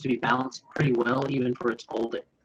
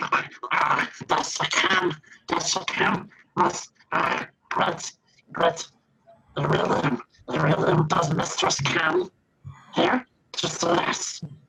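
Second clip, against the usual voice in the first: high, very slow, drawn-out goblin voice; 5 semitones higher than usual. Narrating a voice the players hear at a spot, in a goblin voice. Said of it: "that sounds like goblins".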